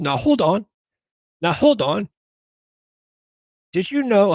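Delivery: put-on loud, clumsy British accent. Imitating Piers Morgan answering a Democrat in a debate: Piers Morgan impression. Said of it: "I can't even do a British accent".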